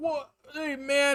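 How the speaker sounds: put-on drunk frat-boy wizard voice. Acting out a wizard frat boy in a game idea: drunk frat boy wizard voice. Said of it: "And he's, like, drunk".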